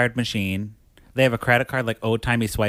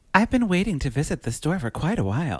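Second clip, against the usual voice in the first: refined, elegant, fancy and classy put-on speaking voice; 4 semitones higher than usual. Role-playing a visitor eager to see the store, fancy Beth Broderick voice. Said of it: "I'll say it in my Beth Broderick voice. So very fancy and, and classy and wonderful".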